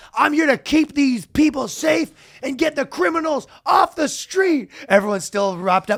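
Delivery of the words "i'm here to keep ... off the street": shrill, very high, fired-up yell. Retelling a prosecutor's speech to a crowd, imitating him yelling. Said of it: "So he's yelling".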